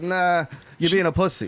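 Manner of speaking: ordinary talk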